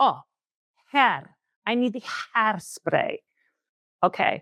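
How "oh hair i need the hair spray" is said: put-on mimicked strong Italian accent. Quoting Dad's reply to the kids, imitating a strong Italian accent. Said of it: "my father with his very strong Italian accent".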